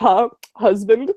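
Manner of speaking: very deep, low-pitched put-on voice. Reading a character's line after being asked for a deep voice: really deep voice. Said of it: "Caitlin, give him a deep voice".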